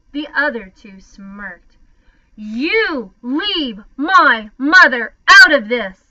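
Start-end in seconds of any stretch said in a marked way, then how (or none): 2.3-5.8 very loud, slow, full-volume bellowing roar. Patrick Edward answers the boy who insulted his mother, roaring. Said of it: "Patrick Edward roared".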